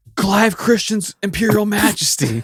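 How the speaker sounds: high, fervent, grand, passionate announcing tone. Repeating what a man shouted while speeding past, retelling a passionate callout. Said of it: "You didn't have to say it with the passion".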